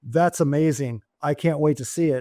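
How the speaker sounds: ordinary delivery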